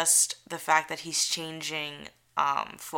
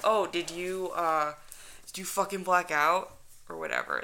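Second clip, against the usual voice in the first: put-on swooping, sing-song, animated, full frat boy voice; 3 dB quieter than usual. Acting out a ghost hunter questioning Nick, who zoned out, in a frat-boy Zach voice. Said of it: "that's my Zach voice".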